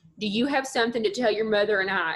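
put-on, super thick North Mississippi accent. Retelling how a father questioned his child after they walked in, in a super thick North Mississippi accent. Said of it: "he's from North Mississippi and has a super thick accent".

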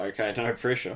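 normal talking voice

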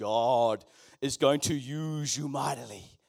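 deep, slow, mighty, thundering angel voice. Acting out an angel appearing and speaking: voice of a thousand waterfalls. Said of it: "in a voice of a thousand waterfalls".

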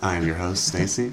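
put-on silky, smooth, sensual voice. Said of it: "Stacy got that silky voice today".

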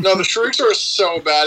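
ordinary talk

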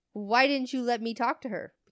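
ordinary delivery

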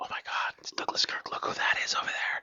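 very soft, breathy, barely voiced whisper. Retelling what Dwayne whispered on spotting a photographer: imitating Dwayne whispering. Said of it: "Dwayne actually was whispering".

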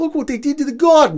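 put-on thick New York accent, very high and shrill. Quoting a guy's line from the Godzilla movie, heavy New York accent. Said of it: "in a very heavy New York accent goes".

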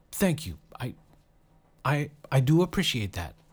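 slightly stammering, halting, stumbling words. Lloyd, embarrassed, finally manages to get his reply out, stammering a bit. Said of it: "Lloyd stammered a bit and finally managed to get out".

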